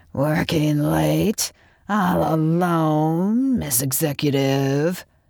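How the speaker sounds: sinister, disguised rough rasp, "alone" drawn out. Reading a story, the narrator voices an anonymous prank caller: rough, rasping voice. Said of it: "rough, rasping voice of her anonymous caller".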